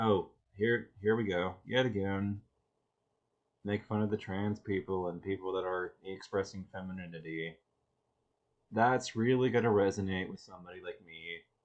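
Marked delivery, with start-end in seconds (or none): 8.7-11.4 thick, heavy, dripping sarcasm.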